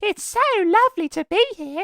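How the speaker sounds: put-on British cartoon pig voice. Talking about doing accents, the speaker does a Peppa Pig impression. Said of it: "my best Peppa Pig impression".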